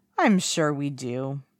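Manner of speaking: very slow, languid, lazy drawl. Wen Chao answers a request for the staff list, drawling. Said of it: "Wen Chao drawls".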